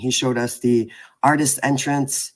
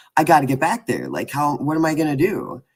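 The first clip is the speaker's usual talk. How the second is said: put-on frantic, swooping, freaked-out panic; 3 semitones higher than usual. Retelling a friend's reaction to a forgotten sticker: imitating Bob freaking out. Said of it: "you're freaking out".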